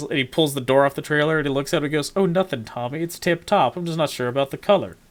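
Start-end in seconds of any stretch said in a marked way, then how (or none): 2.2-4.9 mock heavy sarcasm stressed on every word. Retelling a movie scene line: imitating a sarcastic movie line. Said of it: "It's sarcastic".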